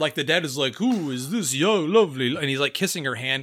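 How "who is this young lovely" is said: put-on drunk manner of speaking. Retelling how the drunk dad greets a girl: imitating a drunk dad. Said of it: "they're acting hammered".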